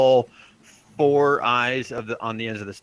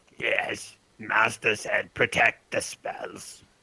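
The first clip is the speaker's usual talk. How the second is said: breathy, hushed, gurgling monster murmur; 6 dB quieter than usual. Game master voicing a creature answering a player's question, gurgling creature voice. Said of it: "you hear the same gurgling voice".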